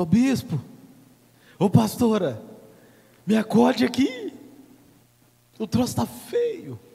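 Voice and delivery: slow, swooping, loud yell. Imitating a believer in trouble at home calling the bishop: imitating someone yelling for help. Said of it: "você grita".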